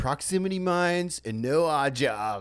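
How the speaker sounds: put-on spaced-out stoner voice, high. Quoting a line the other speaker recorded, imitating a stoner voice. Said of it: "I can't do your voice, but it's like".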